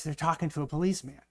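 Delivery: put-on soft, hushed, half-whispered little-boy voice. Telling a joke, as a little boy on the phone, half-whispering. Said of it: "he whispers".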